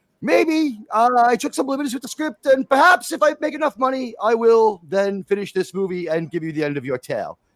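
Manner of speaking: put-on French Canadian accented English. Imitating a film director promising to finish the movie: imitating Denis Villeneuve's French Canadian accent. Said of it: "his French Canadian accent".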